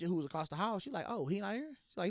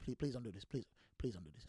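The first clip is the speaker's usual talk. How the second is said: very low, very quiet, calm pleading tone; 8 semitones lower, 11 dB quieter than usual. Retelling pleading with a girl not to fight: imitating talking calm and low. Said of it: "I'm trying to talk low, you know, calm and low".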